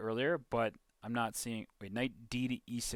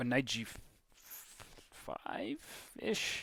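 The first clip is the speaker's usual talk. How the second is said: high, very slow, breathy whispered murmur; 4 dB quieter than usual. Suggesting a chess move unsure, voice getting higher. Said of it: "Your voice gets higher".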